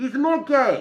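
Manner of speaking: very high-pitched, very loud shrill shout. Retelling a voice-acting audition, imitating the Japanese director's voice. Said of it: "I'm gonna try and do an impression of her voice".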